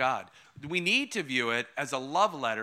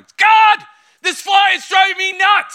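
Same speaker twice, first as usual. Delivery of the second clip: very loud, high, drawn-out top-of-the-lungs yell; 16 dB louder than usual. Retelling a moment in meditation when a fly buzzed: imitating himself yelling. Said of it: "I just yell at the top of my lungs".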